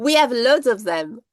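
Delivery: comic put-on French accent, Frenchman's voice. Quoting a Frenchman's reply to the English asking for the Grail: John Cleese French accent. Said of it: "John Cleese doing his, uh, thing".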